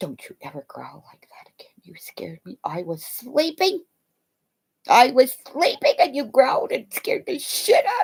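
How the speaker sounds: high, miffed, annoyed dog voice talking back. Retelling how the dog reacted to a growl at night: voicing the dog. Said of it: "he would look at me like".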